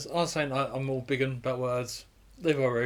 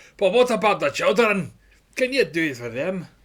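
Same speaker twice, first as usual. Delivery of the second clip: loud, impassioned, pleading put-on Scottish accent, raised; 6 semitones higher, 6 dB louder than usual. Imagining people in the Big Brother house, mock-passionate Duncan Bannatyne impression. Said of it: "passionately saying in Scottish".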